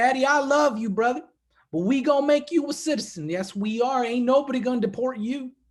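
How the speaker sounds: put-on rural Southern Virginia accent. Retelling what his friend Spencer said to him, imitating Spencer's Virginia accent. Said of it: "he talks like this".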